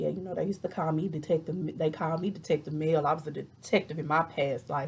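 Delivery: ordinary talk, nothing marked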